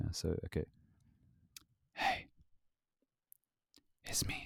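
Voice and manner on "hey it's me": soft, breathy ASMR whisper. Trying out an ASMR voice for the listeners at home. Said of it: "let me know how good's my ASMR voice".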